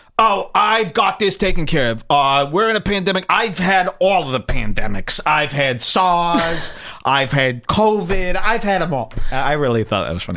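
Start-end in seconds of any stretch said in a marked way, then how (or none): 0.2-9.1 put-on high, slow elderly woman voice.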